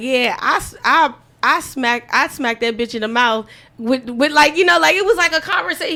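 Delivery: ordinary delivery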